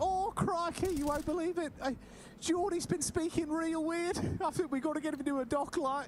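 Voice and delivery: squeaky, very high-pitched voice. Acting out a friend's mum worried about how her son speaks: imitating the friend's mum. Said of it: "And she's like".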